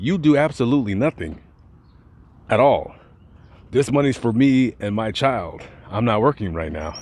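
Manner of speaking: plain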